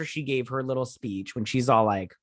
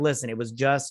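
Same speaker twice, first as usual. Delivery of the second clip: plain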